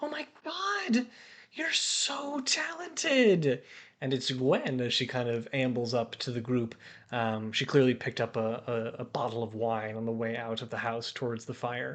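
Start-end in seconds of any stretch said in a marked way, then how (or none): 0.0-3.6 excited gushing, very high pitch, very slow. Narrating a scene by the fire, voicing Gwen approaching the group: Gwen, excited voice. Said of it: "you hear like an excited voice approach".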